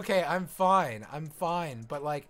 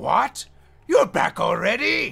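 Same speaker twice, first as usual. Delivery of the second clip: bewildered superior tone, raised, slow and creaky; 7 semitones higher, 8 dB louder than usual. Showing how Aku really talks, never angry: bewildered Aku voice. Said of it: "He sounds more like bewildered".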